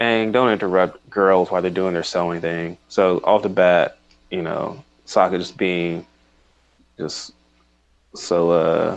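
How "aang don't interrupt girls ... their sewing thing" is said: ordinary talk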